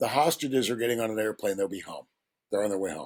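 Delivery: acted whisper. Speaker retelling what the incoming national security advisor whispered to him, retelling a whisper. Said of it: "he leans down and he whispers and he goes".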